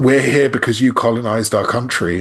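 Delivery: ordinary talk, nothing marked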